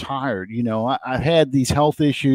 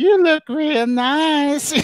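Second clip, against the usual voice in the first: put-on very high old man voice, nicely drawn out; 14 semitones higher than usual. Telling a story about a backup quarterback, doing the Family Guy old man voice. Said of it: "he sounds like the old man from".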